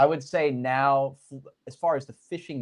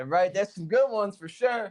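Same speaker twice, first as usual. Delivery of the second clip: put-on pitched-up voice of a seasoned old hand; 6 semitones higher than usual. Retelling a friend's answer about the fish, imitating Kai talking like an old head. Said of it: "you should hear him talk like an old head".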